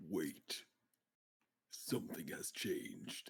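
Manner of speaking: put-on stuffy, nasal voice. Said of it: "You sound a little different".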